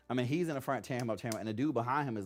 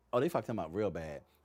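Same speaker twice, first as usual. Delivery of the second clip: normal talking voice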